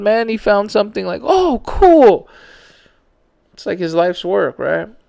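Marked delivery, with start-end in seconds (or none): 1.2-2.3 put-on very high, loud, curious childlike wonder. Retelling a man finding something: imitating a childlike curious man. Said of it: "He was like a child".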